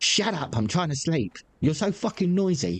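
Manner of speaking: bad, high, mocking send-up voice. Imitating someone knocking on the bedroom wall: bad mocking imitation of her. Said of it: "that's a really bad piss take of her".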